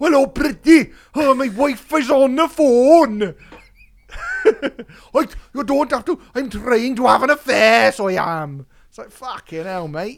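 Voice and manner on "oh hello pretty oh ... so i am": put-on very loud, wild, belted-out Welsh accent. Mocking an actor's role stuck in a car for a whole film; Tom Hardy's mad Welsh accent. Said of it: "Doing a mad Welsh accent".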